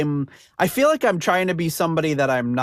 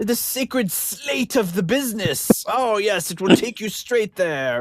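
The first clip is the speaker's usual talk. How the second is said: terrible fake British accent, pitched up; 6 semitones higher than usual. Mimicking reenactors who never break character, in a terrible British accent. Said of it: "with their terrible British accents".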